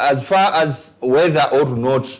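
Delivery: normal talking voice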